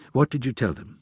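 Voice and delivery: ordinary delivery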